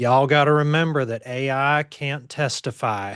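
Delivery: put-on Southern US accent. Quoting a colleague's favorite phrase: imitating a colleague's southern accent. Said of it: "in her nice Southern accent is she'll say".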